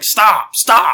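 acted exasperated angry voice. Speaker acts out their past self telling them to stop, retelling an angry yell. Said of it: "and yelling at them and stuff".

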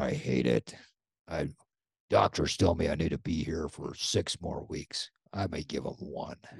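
put-on low, rough, gruff, gravelly old-man voice. Retelling an 80-plus man's reply about riding the bike, in a gruff, gravelly voice. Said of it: "with his gruff, gravelly voice".

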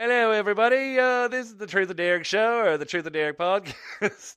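bad, shaky English accent, very high pitch. Opening the truth of derek podcast, greeting everybody, in a bad english accent. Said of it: "That was English or Australian".

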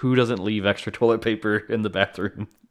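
ordinary delivery

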